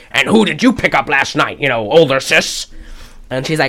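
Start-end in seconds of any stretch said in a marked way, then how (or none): 0.1-2.6 Mid-Atlantic pronunciation. Retelling a film character's line in a Mid-Atlantic accent. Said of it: "he's doing this, like".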